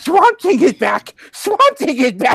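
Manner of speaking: overexcited geek voice. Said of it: "your overexcited geek voice".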